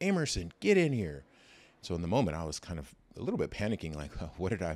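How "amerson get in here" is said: put-on loud, high-pitched holler. Retelling being called into the principal's office, the speaker imitates her holler. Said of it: "she literally kind of hollers".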